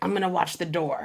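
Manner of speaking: put-on mean girlish voice. Retelling what a girl with a mean face said: imitating a mean-sounding girl. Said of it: "I don't know why she sounded like that".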